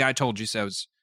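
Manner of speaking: ordinary talk, nothing marked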